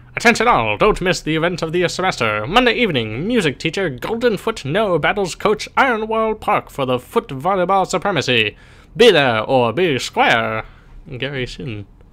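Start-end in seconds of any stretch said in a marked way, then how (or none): 0.2-10.6 put-on high, old-fashioned, old-timey public announcer voice. Speaker reads an announcement note aloud, trying an old-timey voice. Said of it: "Maybe I should do this like an old-timey voice".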